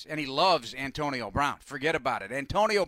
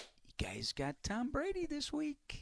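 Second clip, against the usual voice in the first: high, soft taunting whisper. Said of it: "She's taunting me".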